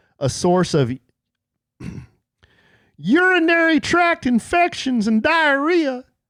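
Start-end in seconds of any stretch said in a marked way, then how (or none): 3.0-6.0 silly, stupid, shrill, high, squeaky goofy voice. Reading a study's findings aloud: stupid voice. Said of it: "without that stupid voice".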